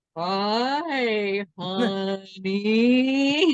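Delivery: dragged-out, slow-motion, drawn-out delivery. Retelling meeting her as she greets them, imitating slow-motion speech. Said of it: "in slow motion".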